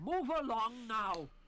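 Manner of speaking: attempted, tried-for Welsh accent. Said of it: "Bless him, he tried".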